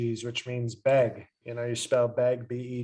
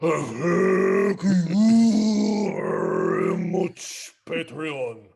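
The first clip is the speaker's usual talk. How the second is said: very slow, loud, swooping sing-song delivery; 5 semitones higher, 5 dB louder than usual. Speaking on behalf of Shinzo Abe to thank Patreon: Shinzo Abe impression. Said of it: "That was the impression".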